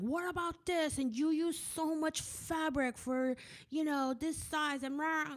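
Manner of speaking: very high, shrill, shrieking and screeching voice. Talking about online critics, imitating screaming commenters. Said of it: "everyone was screaming at me in the comments".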